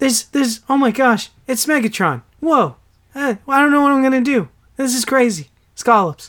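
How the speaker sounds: dumbstruck action-hero reaction, played as bad put-on voice. Acting out a reaction to Megatron: bad Mark Wahlberg impression. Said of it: "That is the worst Mark Wahlberg impression".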